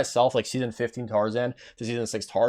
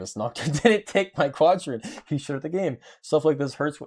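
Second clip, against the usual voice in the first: play-acted laughing while reading aloud; 4 semitones higher than usual. Reading a viewer's message aloud on stream, laughing while reading. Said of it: "sorry for laughing".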